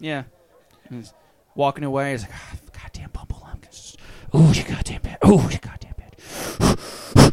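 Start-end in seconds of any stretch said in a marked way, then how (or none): 2.3-7.3 increasingly angry grumbling, higher pitch. Voicing a character walking away and cursing: growing angrier muttering. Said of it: "he's just getting, like, angrier as he's walking further away".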